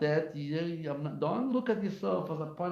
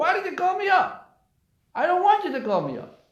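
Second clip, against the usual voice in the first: put-on shrill, very high, very loud swooping old-man scream; 13 semitones higher, 9 dB louder than usual. Retelling how an old man in a synagogue shouted at the gabbai: imitating an old man screaming. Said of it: "This old man screaming on the gabbai".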